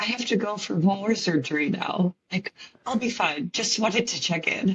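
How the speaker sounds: eerily composed, calmest, scariest calm voice. Retelling a call to her husband before more surgery: imitating the calmest, scariest voice. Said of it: "in the calmest, scariest voice".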